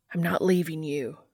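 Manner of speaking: plain reading voice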